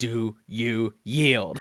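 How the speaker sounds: growled through clenched teeth. Player acting out their character's line to an enemy mid-fight, growled. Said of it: "like growl like".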